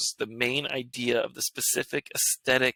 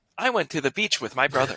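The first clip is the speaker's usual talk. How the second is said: put-on synthetic, computer-read text-to-speech narrator voice. Two people discussing the TikTok voice lady, one demonstrates the TikTok text-to-speech voice. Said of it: "that voice".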